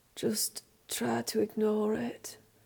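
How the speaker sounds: muffled, mumbled, half-swallowed words. Narrator reading a character's reply, mumbling into his pillow. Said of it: "mumbles Childemas into his pillow".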